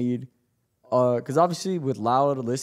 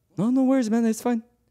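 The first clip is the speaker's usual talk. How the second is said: mock nicest-ever voice, sweet, friendly, pitched way up; 9 semitones higher than usual. After apologizing to an opponent, the speaker quotes his reply, imitating a very nice voice. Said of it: "Like in the nicest voice ever".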